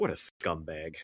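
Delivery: muttered under the breath. Retelling a film scene where Coleman reacts: Coleman muttering under his breath.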